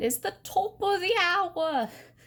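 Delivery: put-on British accent. Explaining the top of the hour on a clock: British accent. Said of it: "if you pardon my British accent".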